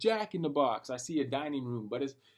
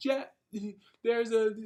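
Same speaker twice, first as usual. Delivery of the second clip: play-acted, high, weepy voice through tears; 7 semitones higher, 4 dB louder than usual. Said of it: "crying as I'm talking to my boy".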